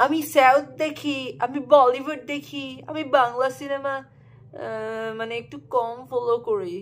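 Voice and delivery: high, slow mock snobby intellectual voice.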